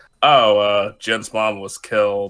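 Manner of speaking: ordinary talk, nothing marked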